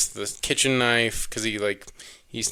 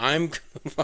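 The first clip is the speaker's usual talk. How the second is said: put-on angry voice, higher pitched; 5 semitones higher than usual. Describing the killer pulling a nail from his forehead: imitating angry Jason. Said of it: "angrily pulls the nail out".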